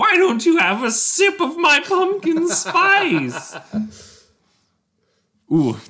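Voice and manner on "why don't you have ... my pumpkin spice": very high, loud, drawn-out witch shout. Game master voices the witch shouting at the players, shouting witch voice. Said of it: "the witch shouts".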